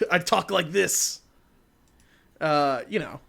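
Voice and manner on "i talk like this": put-on old man voice, pitched higher. Imitating how Mark Hamill sounds now: present-day Mark Hamill impression. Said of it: "and now he's like".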